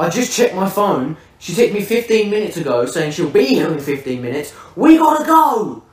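hurried, urgent shouting. Retelling what he shouted after checking his phone: imitating someone shouting. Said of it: "literally just shouts to me".

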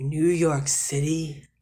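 put-on old, heavy, ponderous voice. Imagining Vicus asking Gregor a question, in an ancient, ponderous voice. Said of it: "most ancient and, like, ponderous, important voice".

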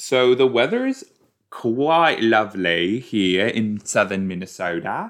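half-hearted, unconvincing Australian accent. Opening an episode with a remark on the weather, attempted australian accent. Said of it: "That was not an Australian accent, but I was trying to do one".

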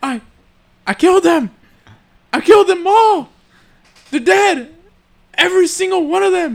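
words spoken angrily. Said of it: "so here's a Anakin, angry".

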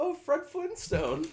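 sincere, genuine delivery, very high-pitched. Retelling what the Uber driver said on seeing him: imitating a genuine, sincere remark. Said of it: "With the most genuine".

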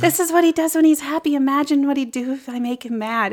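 put-on lighthearted breathy voice. Retelling a film scene, quoting Audrey: imitating Audrey's lighthearted breathy voice. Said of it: "she says it in such a lighthearted, breathy way".

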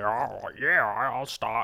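very slow, drawn-out put-on demon voice. Acting out a demon agreeing to stop hunting: put-on demon voice. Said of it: "Is that what a demon sounds like?".

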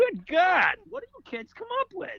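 high, fed-up, exasperated exclaiming voice. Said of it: "You'd be like".

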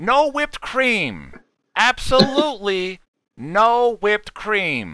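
very high, strange voice. Doing an impression after being asked for one: David Lynch impression. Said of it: "I'll do David Lynch".

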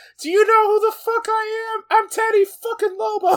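very loud, squeaky squeal in a cartoon mouse voice. Quoting a crime boss's son from a show: Teddy Lobo impression, Mickey Mouse-like. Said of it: "you made it sound like Mickey Mouse".

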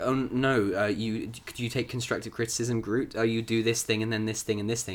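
ordinary talk

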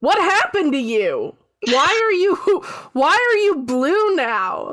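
startled disbelief. Voicing a character that the player overhears: shocked voice.

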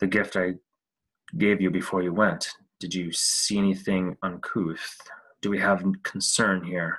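quiet, hushed, low-voiced. A character steps forward so only Annie and Elspeth can hear, speaking quietly. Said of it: "he takes a step forward and says quietly".

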